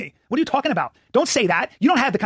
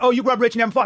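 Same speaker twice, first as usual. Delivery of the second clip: ordinary talk, nothing marked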